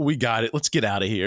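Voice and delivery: put-on disgusted, mocking tone. Retelling what a lady in the movie said: imitating a disgusted voice. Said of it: "It's like she's disgusted".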